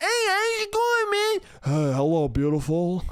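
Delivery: very high, warped, swooping, drawn-out weird voice. Imitating a date who turns out to have a weird, messed-up voice. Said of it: "they got a fucking weird, fucked up voice".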